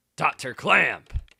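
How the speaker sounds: rough, very loud, gruff tone. Voicing a game character calling out to doctor clamp: gruff voice. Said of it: "This gruff voice is a little tough sometimes".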